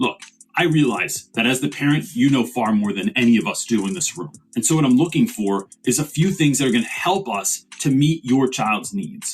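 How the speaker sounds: normal talking voice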